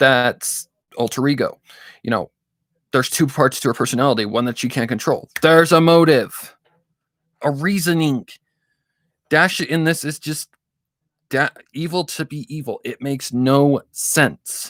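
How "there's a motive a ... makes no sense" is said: high, slow, worked-up, emphatic heated rant. Making a point about a story's characters, yelling. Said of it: "I'm sorry if I'm yelling".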